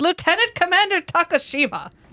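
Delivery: very high, over-enunciated, every syllable hit. Retelling how Jakar greets the commander, imitating Jakar enunciating everything. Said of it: "he enunciates everything".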